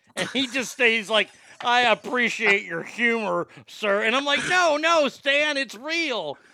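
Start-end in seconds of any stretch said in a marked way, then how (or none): 1.6-4.1 put-on gritty old war-veteran voice. Retelling a war vet's reply to a cooking question, imitating Stan. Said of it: "he sounded like a gritty old like Korean War vet".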